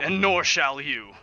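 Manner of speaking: furious, very loud, angry tone. Warning an ambassador not to speak his son's name: angry, in character. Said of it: "looking over at her angrily".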